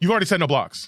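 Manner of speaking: acted-out, alarmed, panicked and heated angry tone. Retelling what an opponent said at a card game: imitating panicked angry opponent. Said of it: "panic in his voice, anger in his voice".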